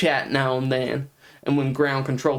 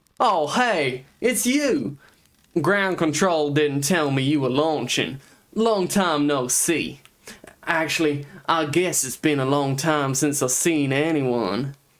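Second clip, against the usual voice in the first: put-on southern US accent, in character. After practicing with the mic muted, voicing a character in a southern american accent. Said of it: "a southern, like, American accent".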